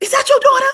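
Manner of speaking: high, loud, shocked shriek. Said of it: "I was like".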